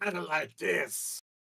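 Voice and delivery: high-pitched, slow, raspy ghoul voice.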